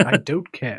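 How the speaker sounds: low-pitched British male voice. Imitating a punching actor on set: Patrick Stewart voice. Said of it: "I like your Patrick Stewart voice".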